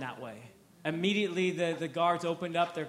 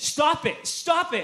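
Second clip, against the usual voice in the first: high-pitched, loud, frantic yelling. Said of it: "He's yelling".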